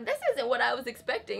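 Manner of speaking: plain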